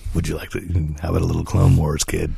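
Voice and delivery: deep, rasping acted voice. Joking about Disney Plus autoplaying Clone Wars, voicing it like the Empire. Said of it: "Did I sound like the Empire?".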